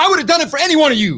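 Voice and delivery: high-pitched, fast, earnest delivery.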